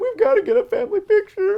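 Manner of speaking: very high, loud, tearful crying. Retelling how the mother called the photographer: imitating a crying mother. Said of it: "the mother calls her up crying".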